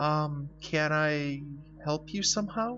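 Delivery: shaky, high-pitched, nervous and polite. Narrating a story, a boy questioned by a policeman asks in a shaky voice. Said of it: "I asked in a shaky voice".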